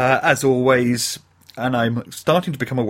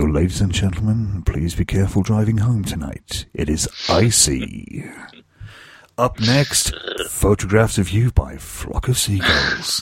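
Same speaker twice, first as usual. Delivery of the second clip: put-on sexy radio announcer voice, low and sultry; 5 semitones lower than usual. Close to the mic, the speaker demonstrates their sexy radio voice. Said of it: "I put on my sexy radio voice, and I get close to the mic".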